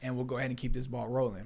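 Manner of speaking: plain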